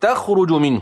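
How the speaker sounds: ordinary delivery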